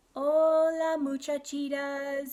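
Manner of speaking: mild, gentle tone, drawn out. Reading a story aloud, a boy greets the girls in a very soft voice. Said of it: "he said in a muy, muy soft voice".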